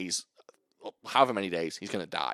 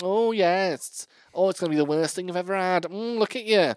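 camp put-on character voice, much higher; 10 semitones higher, 5 dB louder than usual. Imitating a character from the Chinese version they watched: very camp character voice. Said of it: "He's very, very camp".

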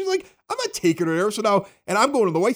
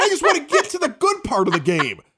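ordinary talk

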